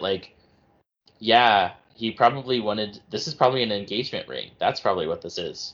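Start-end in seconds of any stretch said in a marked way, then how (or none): none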